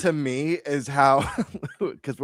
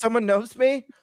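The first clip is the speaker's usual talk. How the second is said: mock excited, eager disbelief, high-pitched; 9 semitones higher than usual. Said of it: "I got all excited".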